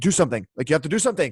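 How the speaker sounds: acted panicked pleading. Retelling a bathroom injury, the speaker replays a panicked plea to her. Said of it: "I'm freaking out, and I'm like".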